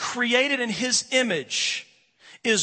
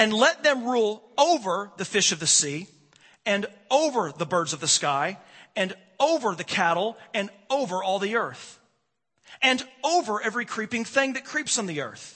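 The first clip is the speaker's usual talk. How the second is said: OVER stressed in every phrase. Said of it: "how often I emphasize the word over".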